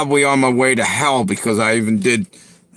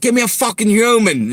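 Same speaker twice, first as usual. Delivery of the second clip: put-on shrill, very high, fed-up frustrated yell; 10 semitones higher than usual. Complaining about automated phone lines, acting out yelling into the phone. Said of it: "I'm like yelling into the phone".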